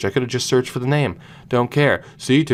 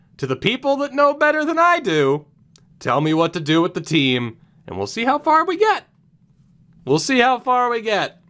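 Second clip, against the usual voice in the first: sarcastic, swooping sing-song delivery; 11 semitones higher than usual. Challenging viewers to say what to do with the team: sarcastic. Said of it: "here's my sarcastic challenge".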